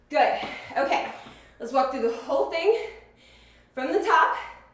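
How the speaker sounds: soft, winded, out-of-breath panting speech. Finishing the counts and moving to the top run: out of breath. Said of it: "I'm very out of breath".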